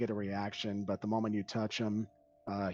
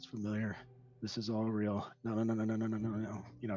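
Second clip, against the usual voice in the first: muttering, mumbling under the breath. Narrating Orion searching along a cave wall, voicing him muttering to himself. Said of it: "he's muttering to himself".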